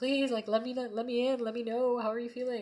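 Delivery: begging plea. Voicing the people in the cards during a reading: acting out pleading.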